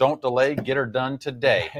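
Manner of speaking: ordinary talk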